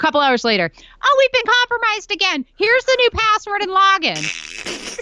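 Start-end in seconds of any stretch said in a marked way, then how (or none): 1.0-4.9 mocking dim-witted woman voice, much higher pitch. Retelling repeated password-reset messages, the speaker does a mocking idiot-woman voice. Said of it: "That's why I'm doing this voice".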